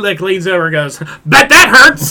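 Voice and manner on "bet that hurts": loud, high, blurted-out yell. Retelling what a man said at the movies, retelling someone yelling out. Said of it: "just like yelling out the things".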